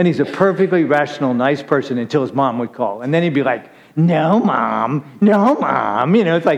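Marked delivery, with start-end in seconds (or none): 4.0-6.2 very slow, whiny complaining, drawn out. Imitating a man answering his mom's phone call: imitating William's whiny tone. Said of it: "it was this whiny tone".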